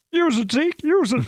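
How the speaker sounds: very high-pitched, squeaky voice. Retelling what was said while setting a screen: Terry Mills impression. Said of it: "we don't often get the Doug Karsh impression".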